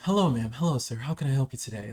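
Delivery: polished, polite, smooth put-on voice.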